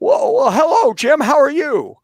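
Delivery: put-on drawl pitched way up, old Hollywood style. Retelling a phone call posing as an editor, greet Jim Adams in a Jimmy Stewart voice. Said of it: "I put on my Jimmy Stewart voice".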